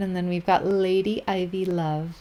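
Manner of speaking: plain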